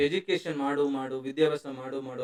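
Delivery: ordinary delivery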